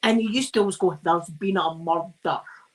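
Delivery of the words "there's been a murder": heavily exaggerated Scottish accent. Explaining a catchphrase from an old police show, doing a Taggart impression. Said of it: "like that".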